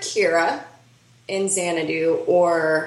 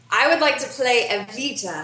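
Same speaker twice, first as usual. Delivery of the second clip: normal talking voice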